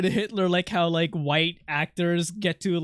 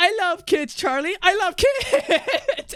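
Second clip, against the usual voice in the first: put-on very high, stretched, drawn-out screaming voice; 11 semitones higher than usual. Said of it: "And he's like screaming".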